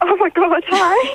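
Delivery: freaking out, nearly crying. A caller on the phone says hi, freaking out a bit. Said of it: "You're freaking out a bit".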